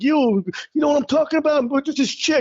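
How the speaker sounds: very high-pitched tough Italian guy voice. Retelling an early open-mic stand-up character: imitating own tough Italian guy character. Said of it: "my first character was just going into going like".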